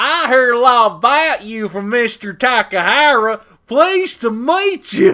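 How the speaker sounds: exaggerated Southern drawl, very loud, drawn out. Asked for a Southern accent, greeting in an exaggerated Southern accent. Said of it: "I'm gonna give you the most exaggerated fucking southern accent you ever heard of".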